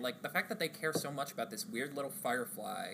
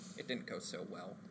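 put-on deadpan, much lower, quieter; 4 semitones lower, 4 dB quieter than usual. Describing a movie scene where everyone starts blasting; retelling a deadpan line. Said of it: "very deadpan".

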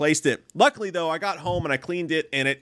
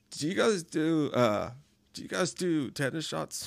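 play-acted casual, breezy, light, slow, offhand tone; 6 dB quieter than usual. Retelling asking at the pharmacy about tetanus shots: imitating saying it lightly. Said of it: "why did you say it so lightly?".

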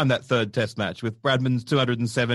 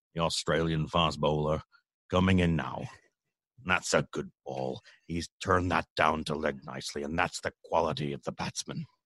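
deep, low sports commentator voice; 8 semitones lower, 7 dB quieter than usual. Trying the impression again after being told to breathe: John Arlott impression. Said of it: "that's not bad".

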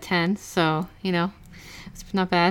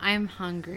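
mock seductive, erotic delivery, quieter; 8 dB quieter than usual. Imitating a movie character saying she is hungry: imitating an erotic delivery. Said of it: "she says it in a very erotic way".

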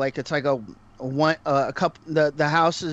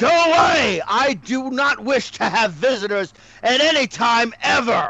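high-pitched angry shout, yelled as if across distance; 8 semitones higher, 4 dB louder than usual. A storyteller voices an old man on his porch, shouting at the visitors. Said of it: "and basically shouts".

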